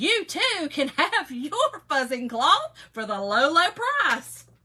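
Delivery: salesy, loud, cheesy infomercial announcer voice. A speaker teases herself for sounding salesy, slipping into an infomercial announcer voice. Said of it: "you sound like a daggum infomercial".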